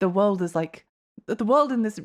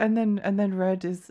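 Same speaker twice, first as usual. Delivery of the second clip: ordinary talk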